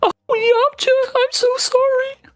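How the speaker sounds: high-pitched cartoon voice. Imagining Puar mourning, the speaker does Puar's high voice. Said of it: "That voice that Puar does, so high".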